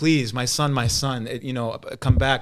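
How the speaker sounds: pleading, begging tone. Retelling how the Apostle John begged at the runaway's feet: Apostle John begging. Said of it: "starts begging him".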